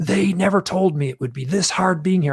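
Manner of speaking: put-on furious, swearing outburst, high-pitched cry. Speaker re-enacting what they screamed on the tape, retelling a scream. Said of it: "I'm screaming this".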